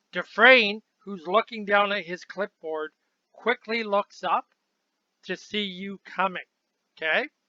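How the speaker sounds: normal talking voice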